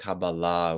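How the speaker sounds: Kabbalah with stress on the final syllable.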